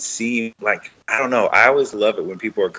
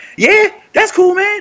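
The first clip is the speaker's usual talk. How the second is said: put-on enthusiastic voice, higher and louder; 6 dB louder than usual. Showing the enthusiastic role voice he used in a web series. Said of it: "an enthusiastic version of me".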